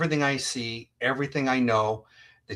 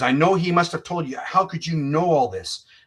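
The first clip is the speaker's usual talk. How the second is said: put-on furious, accusing, high, loud shout; 5 semitones higher, 4 dB louder than usual. Retelling a phone call from a detective: imitating a livid loud detective. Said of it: "he's very livid, and he's very loud".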